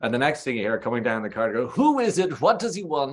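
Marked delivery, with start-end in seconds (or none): 1.7-3.1 very high-pitched put-on voice. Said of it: "impressive impersonation, by the way, of Gabo".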